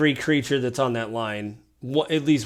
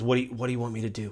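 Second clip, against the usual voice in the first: whispered, quieter; 6 dB quieter than usual. Voicing Swami, who asks the players what to do: whispering. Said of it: "Swami whispers to you guys".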